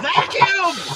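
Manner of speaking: very high, loud hollered shout. Retelling the wife's answer to the shouted question: imitating wife's yell. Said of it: "And she'll yell".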